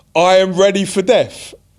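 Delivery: high, all-out scream at full lungs. Picturing facing a huge crowd before a game: screaming. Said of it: "I'm screaming".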